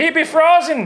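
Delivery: very high, loud put-on Irish brogue. Joking about an ice parrot on a podcast; irish accent. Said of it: "Why did I talk Irish right?".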